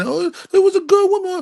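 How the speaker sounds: mock sobbing, very high, weepy crying voice. Acting out people mourning as judgment comes: mock crying. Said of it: "when y'all out here crying".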